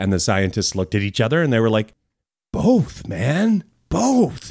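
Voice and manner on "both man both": high-pitched hippie scientist character voice. Retelling how scientists answered critics who called them hippies; hippie scientist impression. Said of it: "It's my impersonation of hippie scientists".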